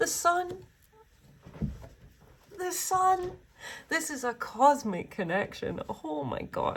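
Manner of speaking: very high voice, choked with tears. Speaking to the guys watching, teary. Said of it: "I'm so teary".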